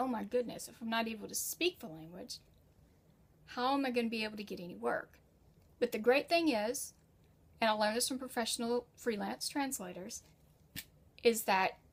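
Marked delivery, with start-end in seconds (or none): none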